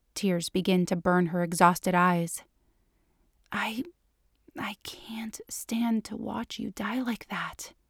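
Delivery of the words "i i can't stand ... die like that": very quiet, slow, barely audible whisper. Reading a story aloud, a character speaks to a dying partner: whispering. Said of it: "she whispers".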